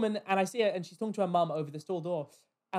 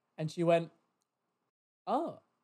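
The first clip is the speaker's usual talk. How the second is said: normal talking voice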